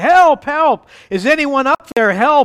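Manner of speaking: yelling, pitched high. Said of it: "he yelled".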